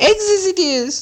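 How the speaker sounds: very high, hissing creature voice. Narrator reads Gollum's answer to Bilbo's riddle, in a hissing Gollum voice. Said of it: "he hissed".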